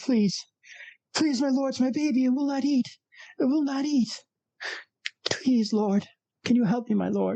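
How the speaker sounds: very high-pitched, sobbing, weeping, desperate voice. Voicing a woman carrying her dead baby; crying, pleading woman. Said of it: "you hear crying and weeping".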